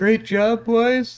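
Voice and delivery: put-on excited, very high, squeaky boyish voice. Mocking how Pablo sounds on the car after he wins, Pablo's high puberty voice. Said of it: "in that high pitched like twelve year old puberty voice".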